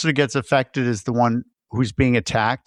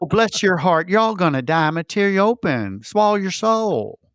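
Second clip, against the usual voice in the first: put-on Tennessee demon voice, much higher; 5 semitones higher than usual. Describing horror-movie demons from Tennessee, the speaker voices them: Southern demon voice. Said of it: "demons are from Tennessee, and they're like".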